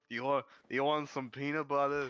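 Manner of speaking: put-on loud, high drunk voice with New York accent. Retelling a man offering peanut butter from his pocket, put-on drunk old New York man voice. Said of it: "like this drunk old New York man".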